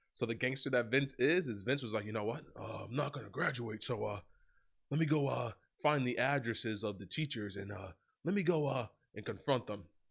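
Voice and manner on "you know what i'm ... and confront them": put-on wrestling promoter voice. Retelling a story about Vince McMahon needing a grade: Vince McMahon voice. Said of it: "in my greatest Vince McMahon voice".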